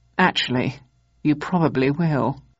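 plain

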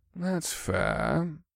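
soft effeminate tone. Scourge, a foppish Zinkari man, answers the narrator's complaint: effeminate tone. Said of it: "Scourge replied in an effeminate tone".

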